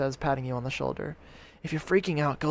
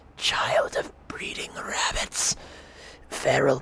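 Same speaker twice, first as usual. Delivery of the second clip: broken, halting, rasping monster voice whisper. Voicing a talking horror addressing the listener, in a halting, rasping voice. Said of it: "address you in a halting, rasping voice".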